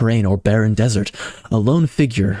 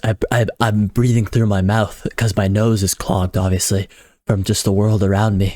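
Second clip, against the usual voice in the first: ordinary talk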